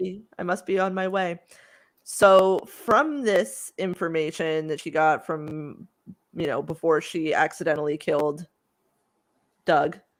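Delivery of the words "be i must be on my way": put-on calm, stunned shock. Retelling what a woman said after a shock: imitating calm, stunned shock. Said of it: "just very calmly, just in total shock".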